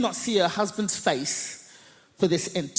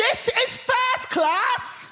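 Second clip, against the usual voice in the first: shrill, very high-pitched shout at full voice. Retelling a woman in a train carriage spotting them, imitating a woman shouting. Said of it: "at the top of her voice".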